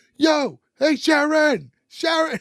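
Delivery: very slow, long, high-pitched drawn-out yell. Retelling a boy yelling up at a window to a girl: imitating someone yelling. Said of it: "he just starts yelling up their window".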